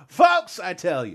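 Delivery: hacky comedian punchline voice. Explaining why they read a title with an exclamation point, in a hacky comedian voice. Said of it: "it sounds like a hacky comedian punching up their jokes".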